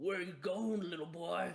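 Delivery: high, snarling, menacing tone. Voicing a burly armored guard pinning someone to the ground: snarling. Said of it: "He snarls at you and he goes".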